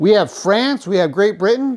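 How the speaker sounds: loud, defiant tone.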